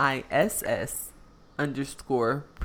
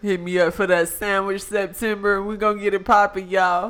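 loud, pitched-up, hyped early 2000s radio DJ voice; 6 semitones higher, 8 dB louder than usual. Plugging a sandwich september to y'all, in an early 2000s dj voice. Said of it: "That sound like a DJ in the early 2000s?".

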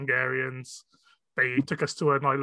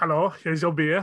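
put-on Eastern European accent; 2 semitones higher than usual. Asked to play a waitress bringing beer to the table: eastern european female accent. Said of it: "Eastern European female accent".

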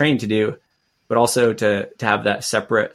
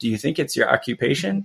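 put-on composed, calm, even, matter-of-fact delivery; 4 semitones higher than usual. Retelling what a man calmly asked the speaker: imitating someone speaking calmly. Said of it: "but he said it so calmly".

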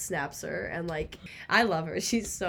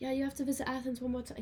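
put-on British accent, pitched up; 5 semitones higher, 6 dB quieter than usual. Quoting a new friend's text message, in a put-on British accent. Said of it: "I don't know why I need the British accent for it".

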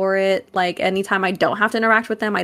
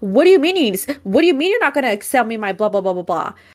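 put-on angry man's yelling; 3 semitones higher than usual. Retelling a man refused a sale over an expired id, retelling a man yelling. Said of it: "started yelling at me".

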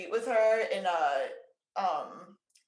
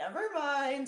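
perfect small little voice, pitched up; 7 semitones higher than usual. Retelling a Muppet's punchline line, in a perfect little Emily Litella voice. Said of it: "in, like, the perfect little voice".

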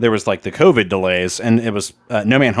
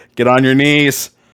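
put-on commanding voice, getting louder; 2 semitones higher, 4 dB louder than usual. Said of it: "He's like".

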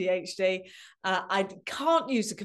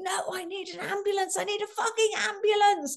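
mock shrill, very high, frantic screaming; 12 semitones higher than usual. Recalling being sat on a chair and tapped on, retelling own screaming. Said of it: "at first I'm just screaming and screaming, going".

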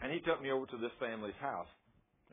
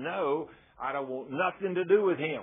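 loud, all-out screamed voice; 2 semitones higher, 6 dB louder than usual. Retelling a woman refusing Jesus: imitating someone screaming. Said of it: "she began to scream".

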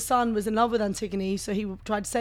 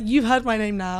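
usual speaking voice

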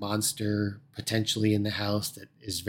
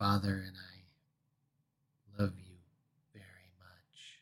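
eerie, creepy whisper, drawn out very slowly; 2 semitones lower, 9 dB quieter than usual. Describing a scene, the speaker voices a woman facing the wall: imitating a creepy whisper. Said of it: "just whispering and saying things like".

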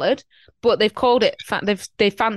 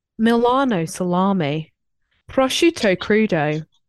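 slow, put-on TV advert narration voice. Practising pronunciation to be corrected afterwards, m&s advert voice. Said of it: "I'll do my M&S voice".

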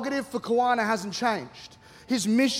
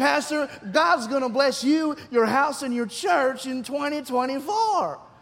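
slow, drawn-out, fake Southern accent; 2 semitones higher than usual. Retelling what someone told the pastor, in a put-on southern accent. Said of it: "it's funnier if I do that".

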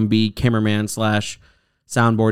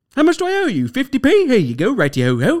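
very high, swooping, hammy, stagey theatrical voice. Mocking people who sound theatric and dumb: mocking a theatrical-sounding voice. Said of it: "You sound dumb".

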